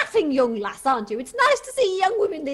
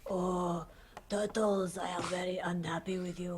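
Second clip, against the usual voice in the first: deep, near-silent murmur; 8 semitones lower, 13 dB quieter than usual. Showing the others a Master Splinter impression. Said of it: "I'm totally Splinter".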